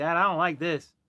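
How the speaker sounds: talking as a dog. Talking to the dog on camera, voicing the dog. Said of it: "She's like".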